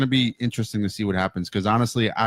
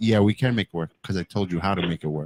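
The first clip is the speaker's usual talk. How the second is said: plain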